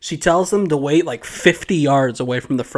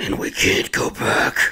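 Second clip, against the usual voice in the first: slow, deliberate, breathy whispered voice. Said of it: "Pulls out the, the Batman voice".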